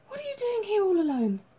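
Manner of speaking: gasping, very high-pitched. James's mother opens the front door to find the small boy alone, gasped. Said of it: "she gasped".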